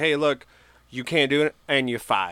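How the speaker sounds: ordinary talk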